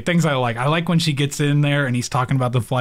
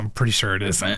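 mock under-breath mutter, much lower and quieter; 6 semitones lower, 4 dB quieter than usual. Speaker quoting a character's reply in a show, retelling an under-breath mutter. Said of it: "she's just under her breath".

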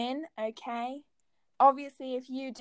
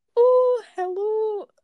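put-on loud, very high Scottish accent; 10 semitones higher, 8 dB louder than usual. Showing the guessing game with a celebrity impression: Lorraine impression. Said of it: "You sound supposed to be Lorraine".

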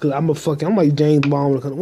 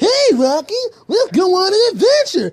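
cartoon moose voice, pitched way up. Performing a cartoon bit with another speaker playing Rocky: Bullwinkle voice. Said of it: "Now I'm talking like Bullwinkle".

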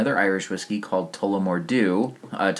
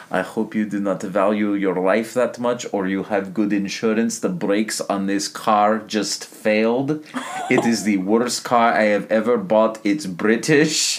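put-on accent sounding Soviet; 3 dB louder than usual. Acting a scene where the car's brakes just failed, Soviet-sounding accent. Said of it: "yours does go much more Soviet".

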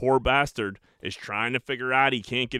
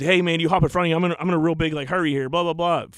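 put-on fast talking, higher and louder; 5 semitones higher, 5 dB louder than usual. Retelling a stranger asking to cut in line: imitating a fast talker. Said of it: "Fast talking him".

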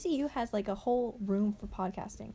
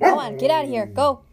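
booming old-timey cartoon voice, like 1950s cartoons; 2 semitones higher, 12 dB louder than usual. Shooing a dog away, like a 1950s cartoon. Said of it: "You sound like one of those nineteen fifties, uh, cartoons".

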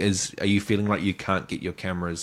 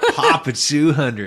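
mock American accent, put on; 5 semitones higher, 7 dB louder than usual. Repeating a phrase they are unsure of, mimicking an American accent. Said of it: "That was a great American accent".

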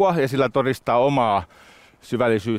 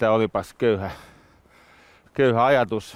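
normal talking voice

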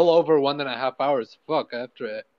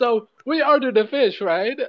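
put-on very high-pitched old-sitcom joke-setup delivery; 11 semitones higher, 4 dB louder than usual. Acting out a joke setup for a laugh track: old sitcom joke delivery. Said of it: "it's gonna be like those old sitcoms".

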